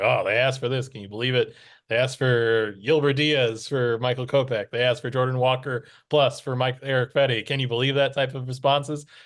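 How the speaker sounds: plain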